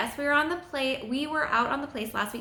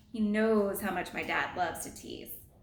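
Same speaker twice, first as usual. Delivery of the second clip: plain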